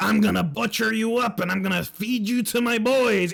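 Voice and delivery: put-on orc monster voice. Retelling a game, voicing Gregor the cook threatening: Gregor the cook voice. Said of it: "Gregor the cook is like".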